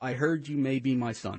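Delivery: normal talking voice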